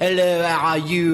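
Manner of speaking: imitated French accent, high and loud.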